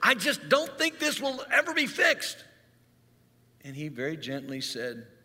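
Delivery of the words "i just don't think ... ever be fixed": very high-pitched, fed-up, frustrated outburst. Retelling rolling out from under a car after a failed repair, acting out frustration. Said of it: "in frustration".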